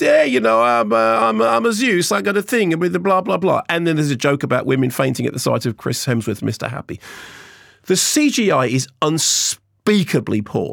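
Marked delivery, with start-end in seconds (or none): 0.0-3.6 put-on Greek accent, pitched up high. Retelling a film scene, imitating Russell Crowe's Zeus accent. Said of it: "He sounds like Jared Leto. He goes".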